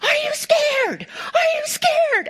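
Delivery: shrieking, full-force, very high yell. Retelling a man yelling at young bull riders: retelling a top-of-lungs yell. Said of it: "he's yelling at them at the top of his lungs".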